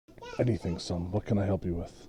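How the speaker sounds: hushed, confiding half-whisper. Voicing a father answering his son who needs something: half-whispering. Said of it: "he's whispering 'cause he knows how important".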